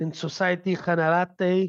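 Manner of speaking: Spanish-accented pronunciation. Listing banks lending the money, naming the next bank in a Spanish accent. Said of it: "I said it with a Spanish accent".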